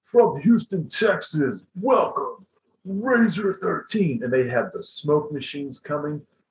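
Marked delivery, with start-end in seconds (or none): 0.1-4.2 loud, pitched-up, very enthusiastic hype announcer voice. Retelling the stage intro as the curtain rises, imitating an enthusiastic strip-club dj. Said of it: "like a DJ announcer at a strip club with tons of enthusiasm".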